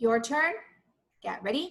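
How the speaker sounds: usual speaking voice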